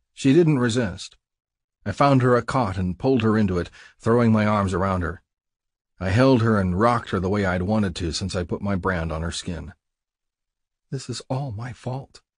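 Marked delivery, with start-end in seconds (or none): 10.9-12.2 soft half-whisper, under the breath. Held in the narrator's arms on a cot, she half-whispers. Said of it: "she whispered".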